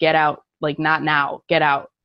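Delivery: ordinary talk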